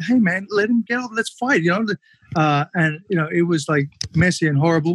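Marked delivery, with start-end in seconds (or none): 0.0-1.6 mock angry, pitched-up, urging tone. Retelling a fight where the other fighter kept holding on: retelling yelling at the ref. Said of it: "I'm yelling at the ref".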